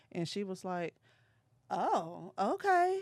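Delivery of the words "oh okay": high, meek, taken-aback, backing-down tone. Speaker retells a woman's reply after standing up to her, imitating her backing down. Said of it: "she like fell way back".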